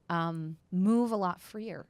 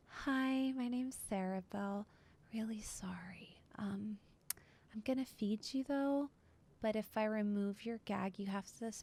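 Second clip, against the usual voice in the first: tiny, small, soft mousy little voice; 4 semitones higher, 8 dB quieter than usual. Describing a pale, freckled woman speaking to you, in Sarah Bell mousy voice. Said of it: "she kind of like says in a mousy voice to you".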